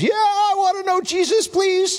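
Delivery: very high, tearful sobbing and bawling. Recounting how a man answered his question, retelling a man bawling. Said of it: "starts bawling".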